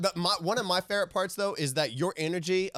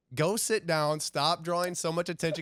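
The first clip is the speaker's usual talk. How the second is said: ordinary talk, nothing marked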